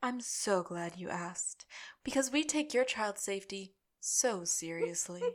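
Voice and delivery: soft, soothing, calming voice with a manipulative edge. Speaker retells a woman answering a question about nanny background checks, imitating a soothing manipulative voice. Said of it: "This woman's voice is like so... like relaxing, like manipulative, relaxing".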